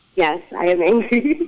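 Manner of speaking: saying it through a laugh. Asked to say the words out loud, answering while laughing while saying it. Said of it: "I notice you laugh when you say it".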